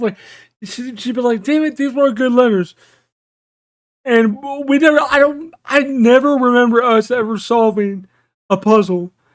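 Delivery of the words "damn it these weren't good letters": plain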